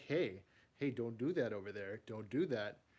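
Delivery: sassy, little, scolding toy-figure voice. Showing a collection, voicing a figure that looks sassy: voicing a sassy action figure. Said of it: "he looks so sassy".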